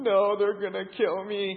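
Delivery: slow delivery, sobbing out the words. Recalling being pushed into a fight, acting out crying. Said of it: "just started crying".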